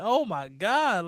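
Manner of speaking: words spoken through laughter, laughing exclamation. Acting out the reaction when a lineman tells his quarterback to run, imitating Myles Garrett laughing. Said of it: "Miles is laughing like".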